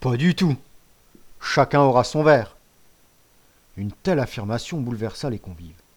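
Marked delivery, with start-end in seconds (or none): 0.0-2.6 loud, scornful, dismissive, disdainful voice. La Crique answers Camus's proposal, with a disdainful retort. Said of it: "dédaigneusement répliqua".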